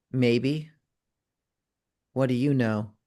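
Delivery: voice dropped a little. Narrating a game scene, a character turns back to speak: lowered voice. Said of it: "lowers her voice a little bit".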